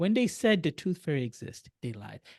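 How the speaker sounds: hushed, secretive half-whisper, very soft. With kids around, the speaker shares a secret with listeners: half-whispering. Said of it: "I'm whispering this because I got my kids around".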